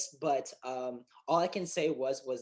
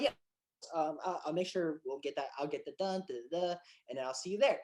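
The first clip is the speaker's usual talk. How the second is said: plain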